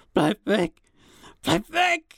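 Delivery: very high, anguished, drawn-out screaming. Sam, tied to a chair, screams as his brother Cody comes toward him: screamed. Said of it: "Doch dann schrie Sam".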